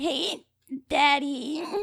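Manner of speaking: high-pitched, squeaky cartoon character voice. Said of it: "It's a little bit of Betty Boop".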